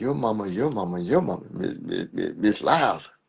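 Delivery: stammered, halting, repeating each word. Retelling a girl's taunt during a schoolyard fight: imitating someone stuttering. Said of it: "she's stuttering".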